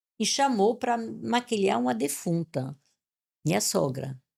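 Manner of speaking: ordinary delivery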